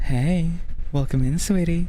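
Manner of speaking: feminine-sounding voice. At the microphone, showing the voice the speaker aims for, more feminine voice. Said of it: "that's how I want to sound like... I kind of want just my voice more feminine".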